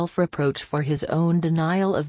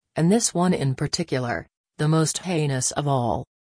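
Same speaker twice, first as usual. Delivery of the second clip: ordinary delivery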